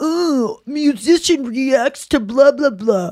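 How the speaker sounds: slow high scoffing tone.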